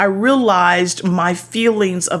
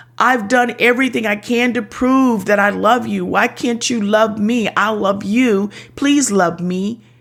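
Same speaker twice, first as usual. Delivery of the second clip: put-on pleading tone; 2 semitones higher than usual. Speaker acts out how their past replies sounded, retelling a pleading tone. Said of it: "The undertone of my responses was pleading".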